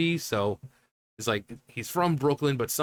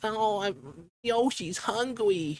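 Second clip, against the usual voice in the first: put-on very high-pitched, babyish tiny-toddler voice; 9 semitones higher than usual. Describing how Yoshi was made to talk like a toddler, speaker quotes him in a childish toddler voice. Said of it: "little childish, you know, sort of talked like this".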